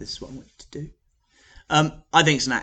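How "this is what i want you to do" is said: gentle, hushed, very soft voice. Demonstrating a classroom voice, give an instruction speaking very softly. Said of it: "So I'm speaking very softly".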